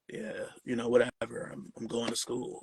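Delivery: put-on deep, too-cool teenage voice, dropped pitch. Retelling a teenage son brushing off his dad: imitating son's deep voice. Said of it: "his voice is all deep and shit".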